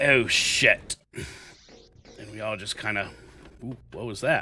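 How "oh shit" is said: put-on thick English cockney accent. Retelling what a man with a thick English accent said, thick Cockney accent. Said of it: "all we hear is this thick uh, Cockney".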